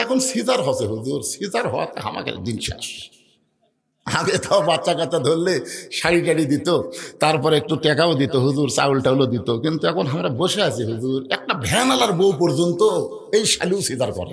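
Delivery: ordinary delivery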